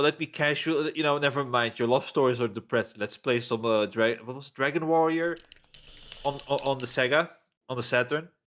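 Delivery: normal talking voice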